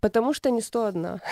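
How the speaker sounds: ordinary talk, nothing marked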